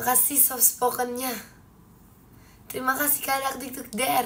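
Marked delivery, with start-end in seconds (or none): 2.7-4.3 hoarse, worn-out, tired-sounding voice. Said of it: "Ini bukan soft spoken, ini serak".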